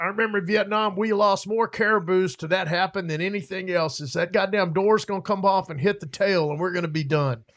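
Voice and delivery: put-on thick, broad, rural backwoods Georgia accent. Quoting a small guy from Georgia, thick rural Georgia accent. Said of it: "very thick rural Georgia accent".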